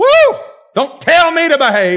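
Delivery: mock high, booming church-lady holler, shrill and swooping. Retelling how a woman answered her daughter while walking down the aisle, imitating a loud woman. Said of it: "She had a voice that made mine sound quiet".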